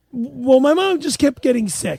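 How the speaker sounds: put-on poor Italian accent. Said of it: "don't do that because it's so bad".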